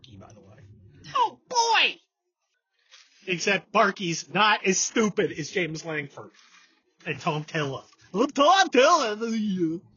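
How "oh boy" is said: very high, squeaky doggy voice. The speaker shows listeners the voice of the family dog: Barky's voice. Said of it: "That's the voice of our dog".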